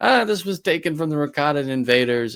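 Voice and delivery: loud, high-pitched, cheerful voice. Showing how he does the artifact dealer before the rebel, in a happy artifact-dealer Luthen voice. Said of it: "nails the kind of happy, you know, uh, artifact dealer Luthen ... does it in his voice".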